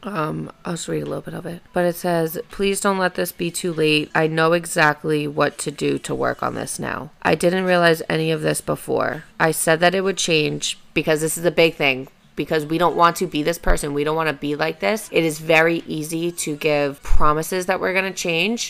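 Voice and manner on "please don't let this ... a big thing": ordinary delivery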